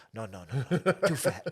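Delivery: slow, blunt, matter-of-fact tone without malice. Retelling a shop assistant's reply about bigger sizes, imitating a matter-of-fact tone. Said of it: "she just said it in such a matter-of-fact way".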